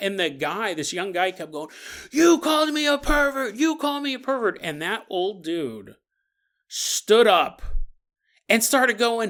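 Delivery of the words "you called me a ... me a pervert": high, heated, repeated screaming. Speaker retells a young guy confronting an old man, retelling a scream. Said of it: "now they're both screaming at each other".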